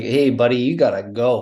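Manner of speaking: put-on Newfoundland accent. Retelling what her dad said in the pantry, newfoundland accent. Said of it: "he's from Newfoundland. And so he has kind of a funny accent".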